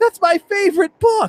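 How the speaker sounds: very high, loud, thrilled, excited gush.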